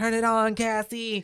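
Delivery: high, drawn-out, stretched shriek. Retelling a movie moment again after hearing it was high-pitched: imitating Aunt Beth's high-pitched shriek. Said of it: "It's like a shriek as it came out".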